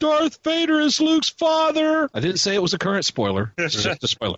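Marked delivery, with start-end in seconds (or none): 0.0-2.1 very loud, shrill, high-pitched voice. Retelling dropping a spoiler while walking by, in a very loud voice. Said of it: "say in a very loud voice".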